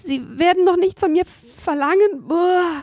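very high, stumbling, stammering voice. Seppel protests after Hotzenplotz orders a plate of soup for him, stammering. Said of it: "stotterte Seppel".

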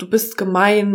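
ordinary delivery

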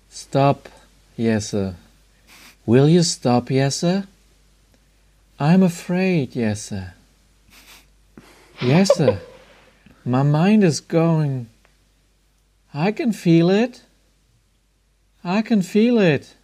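machine-like artificial intelligence computer voice. Asked who wants to be addressed by HAL, speaking to Jesse, HAL impression. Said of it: "Robotermäßig".

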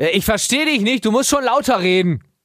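projected voice, like calling across a hall.

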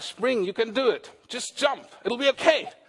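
put-on American accent. Imagining an American-accented voice urging someone at a cliff edge; American accent. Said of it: "eine Stimme mit amerikanischem Akzent".

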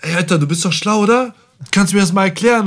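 brash, loud, high-pitched loudmouth voice. Retelling a guy nearby who leans over to ask for help, imitating a loud guy. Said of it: "so laut".

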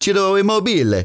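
very high, put-on Italian accent. Back from a weekend in Italy, speaker says a striker's name: best Italian accent. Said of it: "I'm going to say it in my best Italian".

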